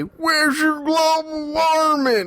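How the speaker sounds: put-on, very high backwoods swamp country voice. Quoting what a global warming doubter says, in a backwoods country voice. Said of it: "you have to say it in like this backwoods, swamp, country voice".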